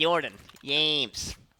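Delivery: imitated Swedish voice. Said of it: "you have to do the voice where it's like".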